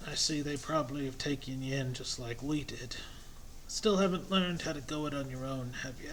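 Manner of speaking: put-on elderly man voice. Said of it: "My old man voice".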